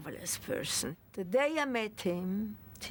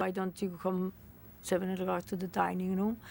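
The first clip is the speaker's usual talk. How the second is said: plain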